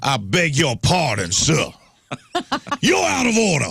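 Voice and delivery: put-on high, slow Southern gentleman drawl. Imitating an old Southern judge in court: imitating a Southern aristocrat judge. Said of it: "the Southern judge".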